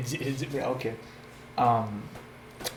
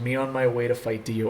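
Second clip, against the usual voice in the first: usual speaking voice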